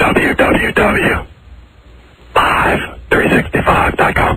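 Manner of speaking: quiet whispered delivery. Asked to just whisper it, the speaker whispers the website address back. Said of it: "just whisper it to me".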